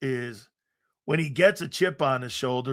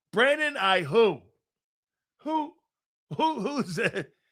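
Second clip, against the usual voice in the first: owl-like hooting on "who"; 7 semitones higher than usual. Dismissing a player compared to a j brown, owl-like 'who?'. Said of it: "I sound like an owl".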